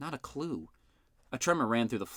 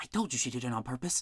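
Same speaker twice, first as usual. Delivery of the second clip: speaking in a whisper. Reading a story where a girl nudges her companion: whispering. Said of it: "whispered Isadora".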